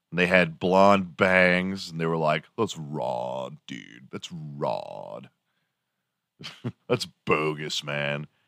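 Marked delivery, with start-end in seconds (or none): 2.6-8.3 very hushed, slow California surfer-dude drawl. Recalling high school guys with blonde bangs: imitating San Diego high-school dudes. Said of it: "And they fucking talked like that".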